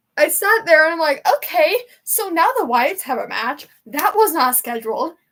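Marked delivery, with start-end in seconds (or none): 1.4-5.1 put-on alarmed, panicking voice. Retelling own reaction to an unscheduled match, imitating own panicked reaction. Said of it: "I'm panicking".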